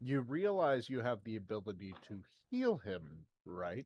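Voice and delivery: very quiet, low, hushed, understated deadpan. Playing a character in a tabletop game, looking over at a companion, deadpan. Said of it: "deadpan deadpan looks over".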